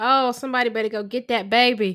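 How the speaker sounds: southern-sounding voice. Retelling own reaction to a movie scene: Southern accent. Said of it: "You get so Southern".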